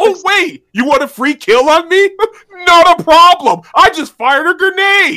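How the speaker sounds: loud, high-pitched, fed-up exasperated venting. Player venting about a grenade in the game, frustrated. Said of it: "You sound frustrated".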